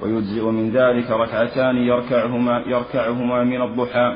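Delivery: normal talking voice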